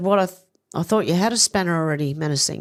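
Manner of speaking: plain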